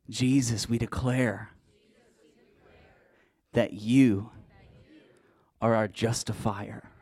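loud, forceful, authoritative proclaiming tone. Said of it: "So say it like you mean it".

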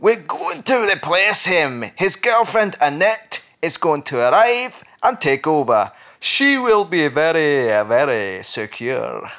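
practised, put-on Scottish accent. Quoting what a councillor said about a replacement, put-on Scottish accent. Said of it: "your Scottish accent, I think you've been working on it".

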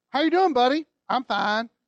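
put-on Kentucky accent. Retelling a toddler's talk after a day spent together: imitating a Kentucky accent. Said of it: "he had a kentucky accent".

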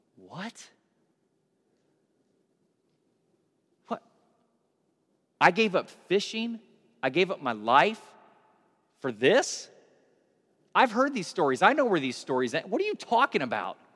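mock stunned, dismayed, swooping, shocked disbelief. Retelling how Peter reacts to hearing Jesus will die: acting out Peter's shocked dismay. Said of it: "he transitions from this joy and this excitement to".

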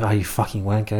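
low mutter under the breath. Speaker acts out what passersby say as someone walks by: said under the breath. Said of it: "you'll just say under your breath".

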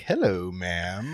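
sugary, sweet, friendly and polite tone. Retelling greeting a lady in Aldi, retelling a sweet greeting. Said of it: "like, being sweet".

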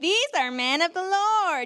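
high-pitched, derisive, taunting mocking tone. Acting out a woman taunting others, imitating a mocking woman. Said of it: "It was a woman more like mocking... going like... like taunting spirit".

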